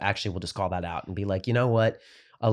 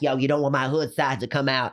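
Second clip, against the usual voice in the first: mocking, put-on wannabe-tough talk, pitched higher; 5 semitones higher than usual. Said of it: "That one guy who talks like this".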